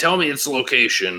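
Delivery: mock alien brute voice, yelling and barking. Retelling a game scene where a brute yells at a captured Marine: imitating a brute yelling. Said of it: "he's yelling at him".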